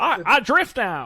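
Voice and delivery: very loud, slow, drawn-out booming character voice. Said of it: "such a good, a good impression".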